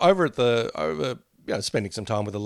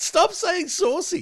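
put-on very high, slow, disgusted, grossed-out teen whine. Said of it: "so grossed out by the term saucy".

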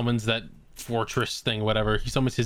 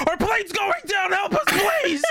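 put-on, very high, shrieking scream; 4 dB louder than usual. Retelling a phone call where the boss's brother screams in the speaker's ear, imitating someone screaming. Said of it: "he just starts screaming in your ear".

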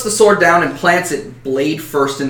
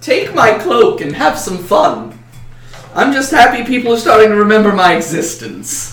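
put-on playful, pitched-up, almost childlike voice; 6 semitones higher, 4 dB louder than usual. Voicing a character's lines in a story, playful childlike voice. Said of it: "he says in a playful voice, almost a voice of a child".

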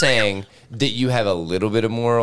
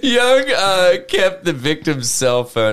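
pitched up, barely holding back laughter while talking; 7 semitones higher than usual. Reading out a crime story detail, laughing while talking. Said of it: "I'm sorry I'm laughing".

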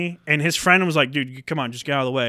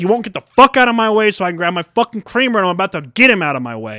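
mock-angry outburst, louder; 4 semitones higher, 6 dB louder than usual. Retelling own words to a Target employee about a man in the way, retelling an angry outburst. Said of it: "And I was pissed".

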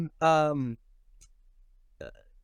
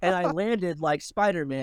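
usual speaking voice

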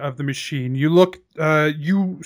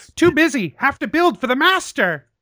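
put-on high goblin creature voice; 9 semitones higher than usual. Voicing goblins that refuse to stop building: goblin voice. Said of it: "the goblins are still climbing all over the machine".

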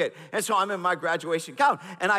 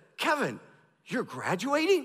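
put-on astonished, disbelieving tone, pitched up; 5 semitones higher than usual. Retelling graduation day, quoting a professor who saw him in his gown: imitating a surprised voice. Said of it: "with a surprised voice".

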